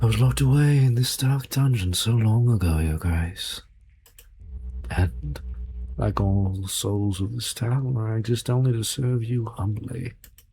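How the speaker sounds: slow, honeyed, sweet-as-syrup demon creature voice. Voicing a humble demon locked in a padlock: syrupy demon voice. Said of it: "The syrupy voice".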